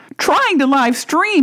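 high-pitched, incredulous tone of sheer disbelief. Narrator reads a man's reply as he hides in the bathroom, incredulous exclamation. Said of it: "he exclaimed incredulously".

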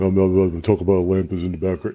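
very deep, dropped-down, friendly buddy voice. Doing a deep voice as Josh: Josh voice, real deep. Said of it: "That's my Josh voice, real deep".

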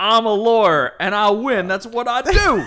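booming, high, slow, drawn-out Southern drawl. Trading movie-character impressions in conversation: Keanu Reeves Southern lawyer voice. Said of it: "He's a Southern lawyer".

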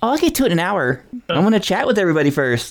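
silly, high, put-on anime-style chatter voice. Mocking someone chatting to the crowd instead of playing, stupid anime voice. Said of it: "chatting in that stupid anime voice".

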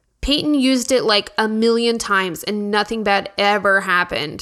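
ordinary talk, nothing marked

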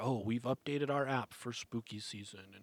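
usual speaking voice

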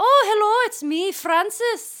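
loud, belted, high-pitched Irish accent in a woman's voice. Answering when the other speaker greets an Irish woman, in an Irish woman voice. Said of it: "Irish woman".

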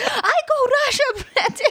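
put-on very high-pitched angry outburst. Quoting a woman who says this whenever she's angry: imitating someone angrily. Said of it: "She's like".

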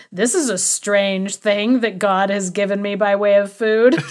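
mock sarcastic tone. Quoting a man's favorite line of his, mock-sarcastic quote. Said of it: "he was being like very sarcastic".

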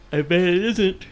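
words stretched through a yawn. A host recording a late show wraps up a news item; yawning mid-sentence. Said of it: "that was me getting hit with a yawn in the mid-sentence".

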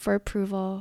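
normal talking voice

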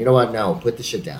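ordinary delivery

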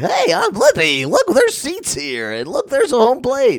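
very high, goofy, silly, swooping sing-song voice. Mocking a video performer pointing at things in a stadium: imitating a goofy voice. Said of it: "points at shit that's in a firehouse in a goofy voice".

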